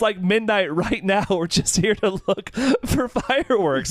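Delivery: high, pleading, protesting tone.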